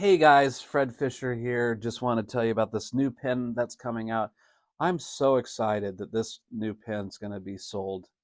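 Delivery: flat, unexcited monotone with no excitement. Demonstrating a dull product announcement, the speaker uses a flat, unexcited voice. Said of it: "without any excitement whatsoever".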